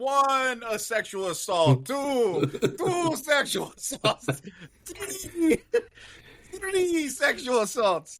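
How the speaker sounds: very high, slow, drawn-out vampire voice. Joking about Sesame Street, counting like the Count: the Count voice. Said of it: "Count Dracula or whatever, uh, Countula. He's like".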